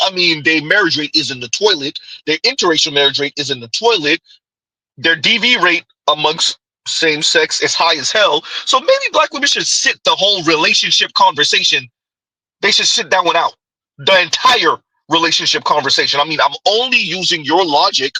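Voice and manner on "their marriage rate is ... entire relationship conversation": ordinary talk, nothing marked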